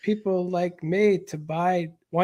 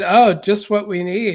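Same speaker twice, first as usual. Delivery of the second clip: loud, heavy sarcasm, said for show; 8 dB louder than usual. Retelling a past comment about a new bakery: imitating own sarcastic remark. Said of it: "I was just making sarcastic comments".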